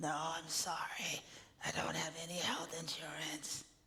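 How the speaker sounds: soft, hoarse, rasping voice. Telling a story, a man answers a woman's question about paying, raspy voice. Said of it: "He replied in a raspy voice".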